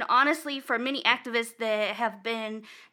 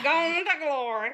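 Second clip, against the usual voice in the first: put-on country accent, laid on; 4 semitones higher than usual. Repeating a phrase from the conversation, say it in a country voice. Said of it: "In a country voice".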